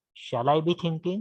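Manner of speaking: normal talking voice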